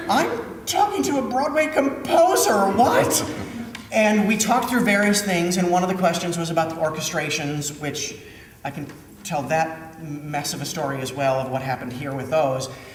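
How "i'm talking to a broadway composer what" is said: very high, excited squeal of starstruck disbelief. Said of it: "sitting up in the light booth going".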